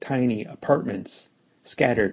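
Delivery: ordinary delivery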